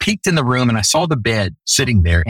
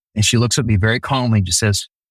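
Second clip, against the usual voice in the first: ordinary talk, nothing marked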